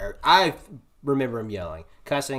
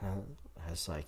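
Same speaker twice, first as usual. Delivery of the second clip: plain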